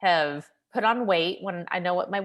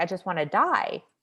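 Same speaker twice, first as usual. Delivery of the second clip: put-on tearful crying voice. Retelling what a crying patient said before her procedure: imitating a crying patient. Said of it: "And she's just crying".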